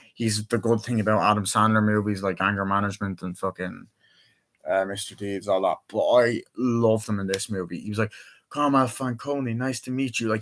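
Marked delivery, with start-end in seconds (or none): 8.5-10.3 coolly menacing, calm, sinister gangster voice. Quoting a movie villain greeting someone: imitating a calm sinister gangster. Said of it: "he's a fucking sinister gangster. He's so fucking calm".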